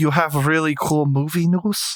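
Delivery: horrible put-on Russian accent. Repeating the co-host's words back, the speaker uses a horrible russian accent. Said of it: "That is a horrible Russian accent".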